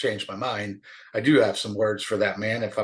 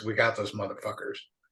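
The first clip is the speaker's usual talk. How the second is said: put-on deep, low male whisper; 5 dB quieter than usual. Retelling how a man leaned into his ear, imitating Millie's deep whisper. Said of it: "he kind of whispers in a deep voice".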